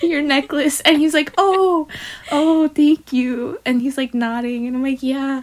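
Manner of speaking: high, trembling, shaking, emotional voice. Retelling an emotional moment with a man, voice shaking. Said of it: "voice is shaking like she's there".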